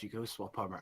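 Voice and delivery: soft muttered aside, half to himself. Voicing a character who speaks to another: muttering under his breath. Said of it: "Laftel mutters under his breath".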